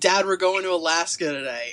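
plain

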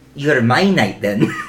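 put-on Scottish accent. Roleplaying a character at the table after being urged to try one: Scottish accent. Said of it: "Scottish accent?".

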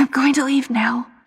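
pressing, urgent tone. Narrator reads a story and voices the man as he speaks; urgent. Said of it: "And urgently he says".

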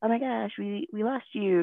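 put-on high, overly peppy, bubbly voice. Retelling what the group leader said after leaving her behind: imitating someone super peppy. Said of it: "super peppy".

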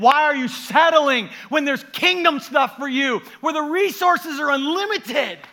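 thrilled, excited yelling, very loud and very high. Addressing the audience about God, yelling with excitement. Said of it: "I'm yelling at you".

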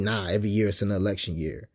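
ordinary talk

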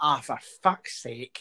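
very loud blurted exclamation. Retelling the mum's outburst during a primary school church service: very loud exclamation. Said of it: "my mum very loudly went".

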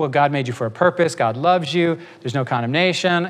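ordinary talk

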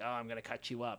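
low, soft crazy-villain voice. Describing a game boss who busts in with dual blades, in a stereotypical crazy bad-guy voice. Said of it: "Talking like the stereotypical like crazy person bad guy".

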